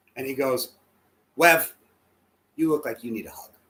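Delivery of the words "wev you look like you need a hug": put-on lisp, imitated lisping manner. Retelling Jesse offering a hug: imitating Jesse's lisp. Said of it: "he's got the sweetest lisp".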